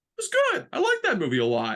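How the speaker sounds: voice gone way up, high, swooping and sing-song. Retelling own past words after a film: imitating own high-pitched voice. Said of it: "My, my voice got really high".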